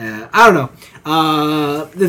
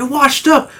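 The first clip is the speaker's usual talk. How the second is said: high, taunting, mocking tone. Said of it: "I'm like".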